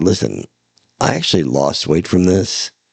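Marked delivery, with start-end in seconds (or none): none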